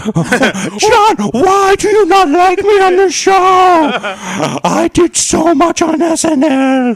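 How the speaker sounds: very high, loud voice, every word stretched very slowly. Complaining to the co-host about not being liked on the show: Adam Sandler voice. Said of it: "imitating Adam Sandler on this podcast".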